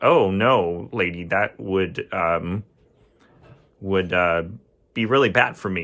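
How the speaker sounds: ordinary talk, nothing marked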